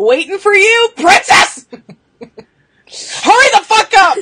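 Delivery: angry shouting. The speaker yells at someone who took too long: mad yelling. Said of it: "Oh, she's mad".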